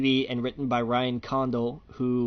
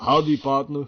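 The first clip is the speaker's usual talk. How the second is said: put-on cowboy voice with Austrian accent, louder; 5 dB louder than usual. Imagining a retired sheriff greeting a newcomer to town: Arnold Schwarzenegger impression. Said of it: "Sheriff Arnold looks up and goes".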